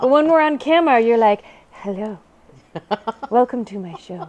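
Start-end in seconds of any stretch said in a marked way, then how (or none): 1.7-4.3 put-on pretty, polished voice. Teasing her sister Liz about how she greets viewers on camera: imitating Liz's pretty voice. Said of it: "put on my pretty voice now".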